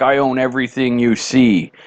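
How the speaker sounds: mock attitude voice. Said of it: "he starts with an attitude".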